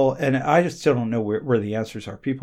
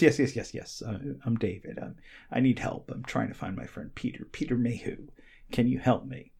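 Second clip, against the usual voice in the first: put-on English accent, said more quietly; 7 dB quieter than usual. Retelling how David asked you for help finding his friend, in David's very pleasant middle English accent. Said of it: "he's got a very pleasant middle English accent".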